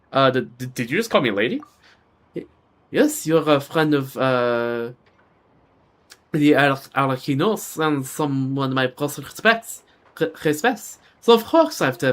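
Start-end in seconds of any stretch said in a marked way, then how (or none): 2.9-12.1 put-on French accent, slower. Voicing a character who answers the traveler, in a French accent. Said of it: "I can kind of do a French accent".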